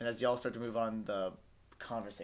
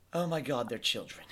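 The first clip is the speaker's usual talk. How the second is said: acted exasperated aristocratic voice; 4 dB louder than usual. Voicing Lodato turning away from the players: Lodato voice. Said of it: "Lodato's like".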